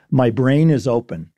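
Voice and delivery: ordinary talk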